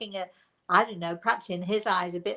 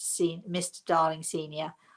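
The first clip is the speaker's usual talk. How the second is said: ordinary talk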